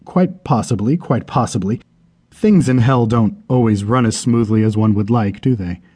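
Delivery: ordinary delivery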